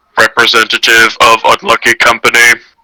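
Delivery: low robotic droid voice. Narrating a scene to players, voicing a cargo droid: deep droid voice. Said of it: "you hear a deep voice that says".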